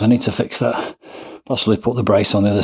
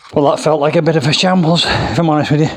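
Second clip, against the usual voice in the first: winded, breathless puffing speech, pitched up; 6 semitones higher than usual. Speaker talks right after a set of squats, out of breath. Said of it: "But I am out of breath".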